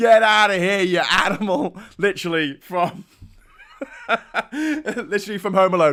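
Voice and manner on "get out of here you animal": put-on heavy, thick New York accent, laid on. Recalling being hounded out by a screaming man, a speaker quotes him, strong new york accent. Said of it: "in a really strong New York accent".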